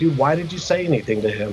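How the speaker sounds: ordinary talk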